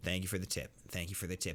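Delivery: put-on polite tone barely covering audible irritation. Showing how they answer a buddy's tip: imitating acting nice while annoyed. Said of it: "I'll say it just like this".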